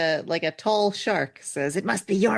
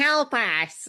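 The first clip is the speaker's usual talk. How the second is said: put-on animated child voice, much higher; 5 semitones higher than usual. Acting out another of the children calling out, in an animated child voice. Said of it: "a different one goes".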